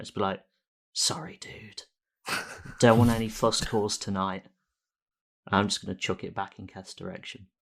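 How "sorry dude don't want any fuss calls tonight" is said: soft, secretive, hushed whisper. Whispering in character to the ball after a struggle: whispering. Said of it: "whisper to the ball".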